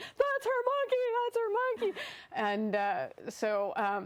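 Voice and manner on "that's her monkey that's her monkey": put-on very high, repeated little girl yelling. Retelling a little girl behind the ropes: imitating a girl yelling. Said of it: "She starts yelling".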